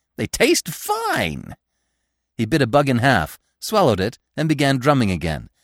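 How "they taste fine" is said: very high-pitched voice in high glee. A woodpecker answers a scolding squirrel, in high glee. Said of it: "said the woodpecker in high glee".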